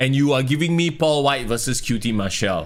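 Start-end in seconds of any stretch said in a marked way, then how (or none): none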